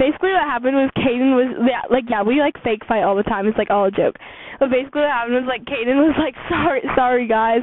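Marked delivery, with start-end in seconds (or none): 6.5-7.6 put-on, mock-dramatic voice. Retelling a friend's fake apology in a joke fight: imitating Kaden's dramatic apology. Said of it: "She was being dramatic".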